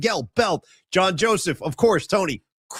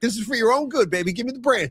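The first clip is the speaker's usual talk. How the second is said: a put-on, high-pitched grandma character voice; 5 semitones higher than usual. Retelling a comedy bit where Grandma takes the branch: imitating a grandma. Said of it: "And then Grandma would be like".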